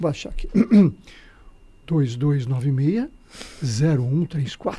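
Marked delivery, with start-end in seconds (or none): 1.9-4.8 low radio announcer voice. Repeating a phone number for the audience, now in an announcer voice. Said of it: "Vamos fazer voz de locutor agora".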